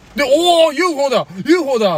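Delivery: mock excited shout. Retelling seeing a fast-moving thing taken for a UFO, retelling an excited shout. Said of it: "でテンション上がって".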